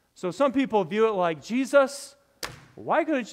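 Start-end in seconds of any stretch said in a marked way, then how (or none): 1.5-3.4 put-on loud, high-pitched complaining outburst. Acting out how some people read Martha's words to Jesus: imitating a loud complaint. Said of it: "that was really loud".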